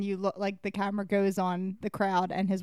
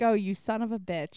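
plain

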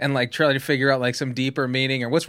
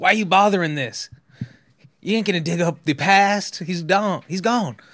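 put-on Southern accent, played as a cop; 4 semitones higher than usual. Retelling a scene from the film Zodiac, playing the cop: Mark Ruffalo impression, Southern accent. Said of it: "San Francisco cop from the South".

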